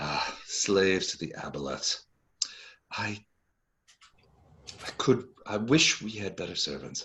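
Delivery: almost lamenting, wistful, longing woman's voice. Voicing a woman speaking in aboleth as servants pass: wistful woman's voice. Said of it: "it's almost wistful".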